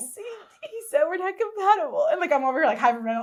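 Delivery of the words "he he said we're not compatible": very high, put-on, weepy fake sobbing. Retelling fake crying on the phone to mom: retelling fake crying. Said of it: "So I started fake crying on the phone".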